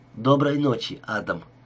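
plain reading voice

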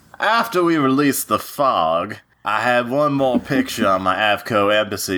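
Southern cartoon drawl, "fog" stretched out. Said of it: "I will be reading [name] as Foghorn Leghorn".

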